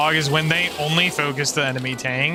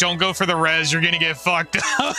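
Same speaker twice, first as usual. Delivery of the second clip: ordinary talk, nothing marked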